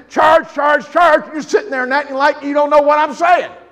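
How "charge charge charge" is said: loud, high preacher's yell at full force. Speaker voicing the one who rose again, urging the church to charge, yelling as loud as possible. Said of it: "I'm yelling in your ear as hard as I am and loud as".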